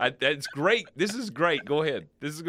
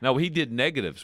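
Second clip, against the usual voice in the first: normal talking voice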